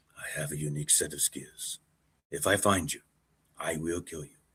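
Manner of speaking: very quiet murmur in a bad put-on voice. Talking about golfers' unique skills, slipping into an impression: Liam Neeson voice. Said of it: "Why am I sounding like Liam Neeson now?".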